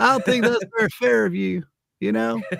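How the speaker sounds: raspy, slightly high voice. Answering a joke answer about punching Bill Clinton: Bill Clinton impersonation. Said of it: "that's my Bill Clinton impersonation".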